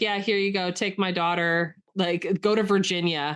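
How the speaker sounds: ordinary talk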